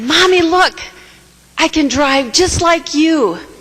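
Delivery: put-on play-acted, very high, bright, cheerful little girl voice. Mother retells her little girl calling to her while riding: retelling a cheerful, happy call. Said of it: "with the most cheerful and happy voice".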